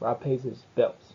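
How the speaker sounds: statement tune, pitch falling on "bills". Intonation practice sentence that completes the thought, falling pitch on final 'bills'. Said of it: "No rising. Kind of falling at the end".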